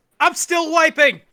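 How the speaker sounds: shrill, very loud, high-pitched shout. Arriving back in the scene from the bathroom: shouting. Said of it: "He just shouts".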